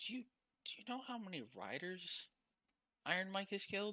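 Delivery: secretive half-whisper. Voicing a character who pulls the listener close: half-whispering. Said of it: "Why are you whispering?".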